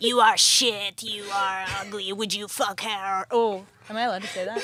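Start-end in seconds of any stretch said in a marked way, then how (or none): 0.0-3.3 put-on very old man voice with French accent. Retelling a clown school class: imitating a super old French guy. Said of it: "super old French guy being like".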